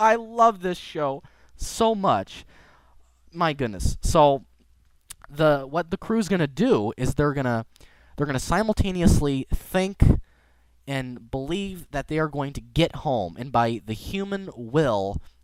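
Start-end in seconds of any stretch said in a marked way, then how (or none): 0.0-4.0 high, tearful, choked voice breaking up. Describing a favorite show's episode, breaking up in tears. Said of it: "I'm breaking up in tears".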